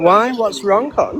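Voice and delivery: condescending, patronizing, talking-down tone. Answering another speaker's complaint about the voice: condescending tone. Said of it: "you sound very condescending".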